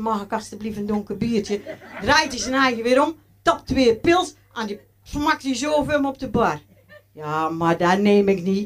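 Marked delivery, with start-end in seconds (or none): 0.0-1.6 very meek, bashful, low and timid. Retelling how they spoke to the bald waiter at the bar, acting very timid. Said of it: "Dus ik heel bedeesd".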